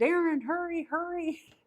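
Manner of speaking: loud, shrill screaming. Retelling calling someone outside to see the lights: retelling a scream. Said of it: "I'm screaming at the door".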